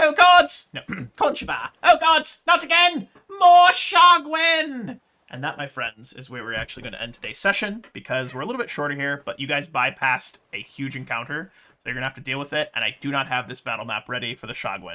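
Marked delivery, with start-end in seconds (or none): 0.0-5.0 drawn-out panicked scream, very high and very loud. Voicing a character who screams as an attack comes: Conchobar screaming in panic. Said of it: "you hear Conchobar screaming".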